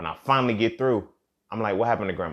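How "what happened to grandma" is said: acted-out angry, pissed-off, demanding tone. Retelling finally getting through after calls went unanswered: imitating own angry question. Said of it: "I'm getting pissed off now".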